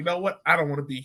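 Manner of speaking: usual speaking voice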